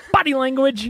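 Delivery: loud, forceful delivery punched out with real force. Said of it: "you gotta have a little more force".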